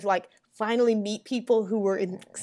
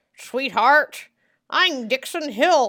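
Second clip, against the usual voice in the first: put-on faux American accent; 4 semitones higher, 5 dB louder than usual. Discussing the Dixon Hill episodes, imitating Picard: Picard's faux American accent. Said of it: "Picard's faux American accent".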